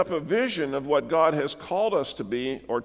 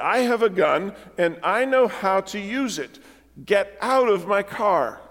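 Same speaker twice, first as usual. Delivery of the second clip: mock firm, forceful, no-nonsense tone; 4 semitones higher than usual. Retelling a woman with a gun ordering young men from her car, forceful voice. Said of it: "with a forceful voice".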